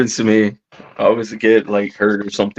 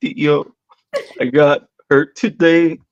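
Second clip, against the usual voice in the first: mock very slow, high, drawn-out tearful sobbing; 5 semitones higher than usual. Retelling what a hurt nephew said after stitches: imitating nephew sobbing. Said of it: "He's all sobbing".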